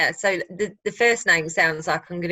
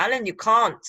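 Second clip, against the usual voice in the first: comedic, sketch-style put-on South African accent; 4 semitones higher than usual. Speaker quotes a line from a comedy sketch, south african accent. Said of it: "South African um, accent".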